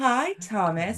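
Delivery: acted, unnervingly pleasant, creepy, sugary sweet tone. Retelling acting creepy for a child after he watched Coraline: imitating own creepy pleasant voice. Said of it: "started acting really creepy and weird".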